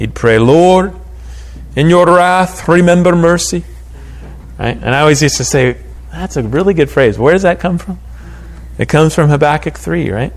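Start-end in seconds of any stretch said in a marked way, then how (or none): 0.4-3.6 put-on heavy, thick Scottish accent. Retelling how a former pastor always prayed: thick Scottish accent. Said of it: "in his thick Scottish accent".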